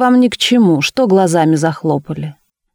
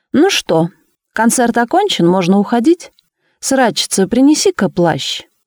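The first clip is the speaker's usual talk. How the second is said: openly derisive, mocking, taunting tone; 4 semitones higher than usual. Bubentsov, after the investigation experiment fails, asks the officials, mockingly asking. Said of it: "Бубенцов насмешливо осведомился".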